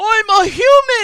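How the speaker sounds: screamed character voice. Playing Rufus after being mistaken for a puppy, screaming indignantly. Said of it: "screaming just like".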